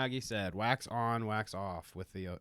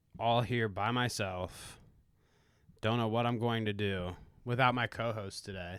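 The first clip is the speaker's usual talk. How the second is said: mock sorrowful woe-is-me voice, played for laughs. Opening the episode alone without the co-host: mock sad. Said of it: "I'm very sad".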